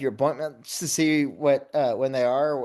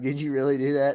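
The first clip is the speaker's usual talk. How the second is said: ordinary talk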